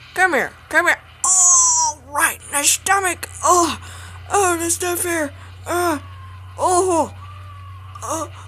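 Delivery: cartoon dinosaur character voice, drawn-out "oh". Voicing the dinosaur in a comedic scene: put-on dinosaur voice. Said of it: "I'm going to be doing the voice of the dinosaur".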